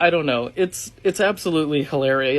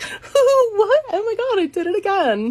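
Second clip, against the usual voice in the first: put-on very high, swooping, ditzy blonde valley-girl voice. Recalling a commercial where he wanted a valley girl character, bimbo valley girl voice. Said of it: "a bimbo kind of like blonde valley girl character".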